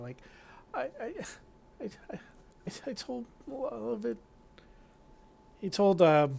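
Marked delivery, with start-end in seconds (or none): 0.0-4.2 sobbing, higher and much quieter. A frightened man answers after being told all will be forgiven, sobbing through words. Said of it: "and and through the sobs".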